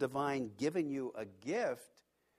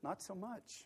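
very small, hushed voice, near a whisper; 4 semitones higher, 9 dB quieter than usual. Retelling their own reply to a remark, in a real small voice. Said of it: "And I said in a real small voice".

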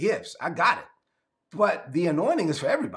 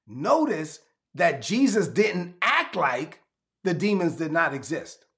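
slow, deliberate, emphatic delivery. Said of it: "let me slow down on this point".

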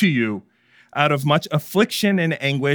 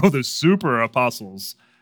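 sneering, taunting, mocking sarcastic tone. Retelling how Paul taunts his critics: imitating Paul taunting. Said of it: "he's taunting them".

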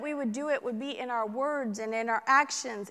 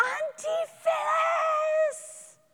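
put-on play-acted very high, long, drawn-out child scream. Retelling a niece running over in a packed restaurant: imitating a child screaming. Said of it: "screaming out".

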